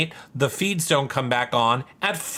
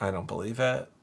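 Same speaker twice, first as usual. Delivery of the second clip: usual speaking voice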